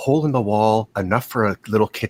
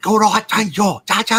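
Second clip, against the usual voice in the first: screaming in German, higher pitch; 12 semitones higher, 3 dB louder than usual. Retelling a museum exhibit where a guard yells: imitating a German guard screaming. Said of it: "he starts screaming in German like a guard yelling".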